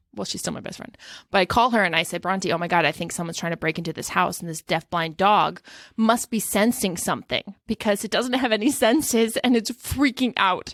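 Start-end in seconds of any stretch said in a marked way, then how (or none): none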